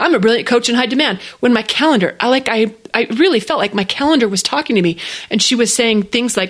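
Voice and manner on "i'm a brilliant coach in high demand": ordinary talk, nothing marked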